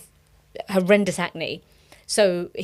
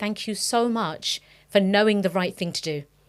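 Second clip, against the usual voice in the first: usual speaking voice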